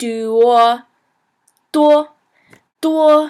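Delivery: high, level, unchanging monotone on each do. Teaching how to pronounce a tone, demonstrating the syllable: high-pitched monotone. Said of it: "you want to do kind of like a monotone, higher pitched".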